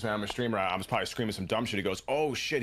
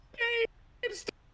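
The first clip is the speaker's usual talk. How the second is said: put-on little high-pitched girl voice, shrill screaming. Retelling yelling at a video game, speaker re-enacts a high-pitched scream. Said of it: "screaming in a really high pitched voice".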